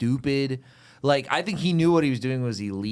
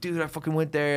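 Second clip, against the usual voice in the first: put-on fed-up, pissed-off, angry griping; 3 semitones higher than usual. Retelling how a friend came back from the store: imitating a pissed-off friend.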